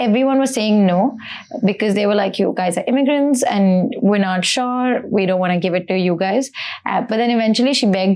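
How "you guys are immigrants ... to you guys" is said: usual speaking voice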